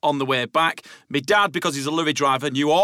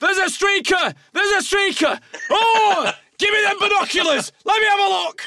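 put-on very high shout at the top of the lungs. Telling how his dad reacted to a streaker at the game, retelling dad's loud shout. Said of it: "my dad just shouted at the top of his voice".

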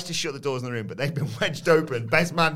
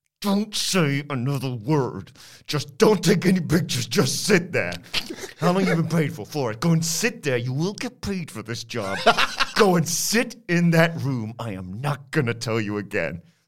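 put-on furious, angry whisper; 3 dB louder than usual. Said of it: "So he whispers".

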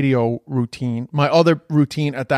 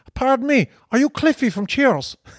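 put-on Cork accent, much higher pitch; 11 semitones higher than usual. Retelling an early stand-up routine about a Cork guy in a bar, Cork accent. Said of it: "They couldn't believe I could do a Cork accent".

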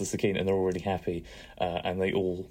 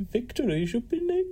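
very high, put-on camp delivery. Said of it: "you gotta say it like he does".

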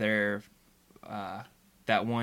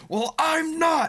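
stern sharp delivery, very loud and very high; 8 dB louder than usual. Retelling a Star Trek scene, quoting Picard's reply: imitating Picard's stern retort. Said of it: "Picard very viscerally goes".

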